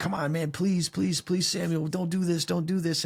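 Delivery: acted desperate begging. Retelling a story, the speaker acts out a man begging another: imitating desperate begging. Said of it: "He's begging him, begging him".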